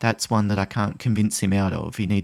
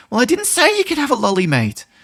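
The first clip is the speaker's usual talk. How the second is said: irritated, very high-pitched, loud annoyed voice; 7 dB louder than usual. Demonstrating the way of speaking that escalates conflict, annoyed, upset tone. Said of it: "if I speak like that".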